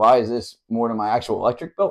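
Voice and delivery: ordinary talk, nothing marked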